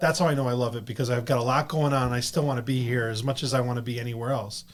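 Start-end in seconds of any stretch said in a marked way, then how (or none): none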